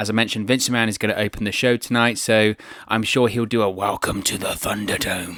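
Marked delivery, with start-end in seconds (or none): 3.7-5.4 bad, throaty evil villain announcer voice. Previewing the show opener, doing a bad Vince McMahon impression. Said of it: "probably the worst Vince McMahon impression".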